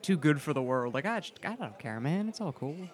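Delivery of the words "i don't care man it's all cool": soft, suave, laid-back cool delivery. Talking about a character's personality with someone: suave, laid-back Spike voice. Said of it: "He's like that suave, laid-back".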